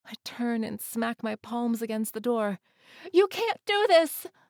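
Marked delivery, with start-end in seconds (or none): 3.1-4.2 very high, very loud, shrill scream. Reading a story, the narrator pounding on a cell door: screaming. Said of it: "I scream".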